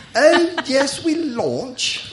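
fake, put-on British accent, pitched way up. Showing how the word is said in british, in a put-on british accent. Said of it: "Cuando intento hablar británico, tengo que poner la postura física".

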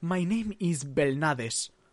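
put-on slow Spanish-accented English. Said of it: "le sale un acento español, sobre todo al pronunciar su apellido".

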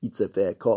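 plain

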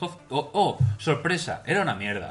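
sarcastic mock surprise. Chatting about shows watched on Netflix, ironic. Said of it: "Era ironía".

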